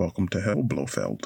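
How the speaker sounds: very low, deep voice, kept brief. Blurting out a very short line: Sean Connery impression. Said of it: "the shortest Sean Connery impression ever".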